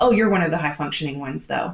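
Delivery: plain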